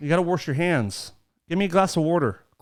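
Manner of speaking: put-on Pennsylvania accent. Showing what the Pennsylvania accent sounds like: Pennsylvania accent. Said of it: "what's the Pennsylvania accent?".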